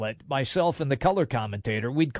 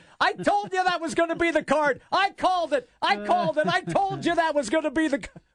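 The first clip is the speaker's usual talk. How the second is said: mock screaming, higher; 13 semitones higher than usual. Retelling how the color guy started screaming when the card came up: imitating someone screaming. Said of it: "the color guy just starts screaming".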